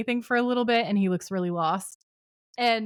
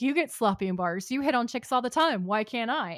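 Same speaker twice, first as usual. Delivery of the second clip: sulky, sullen, mouthy, sassy tone. Retelling a drunk brother's complaint in a bar: imitating sullen sass. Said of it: "he's all sullen about it and sassy".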